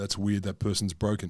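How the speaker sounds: usual speaking voice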